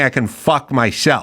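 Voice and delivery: ordinary delivery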